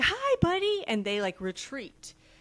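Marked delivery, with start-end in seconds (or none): 0.0-0.8 very high, big-energy, enthusiastic voice. Acting out greeting someone with big energy: big-energy greeting. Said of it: "if I got big energy and I'm like".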